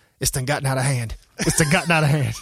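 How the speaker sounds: quiet mumbling, as if to oneself. Retelling a story, imitating Leon muttering under his breath. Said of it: "say under his breath".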